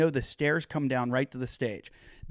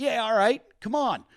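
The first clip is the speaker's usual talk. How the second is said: very high-pitched put-on Pittsburgh man accent; 10 semitones higher, 3 dB louder than usual. Retelling squaring up to a man threatening to fight, in a Pittsburgh guy voice. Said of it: "I start to turn my little like Pittsburgh guy".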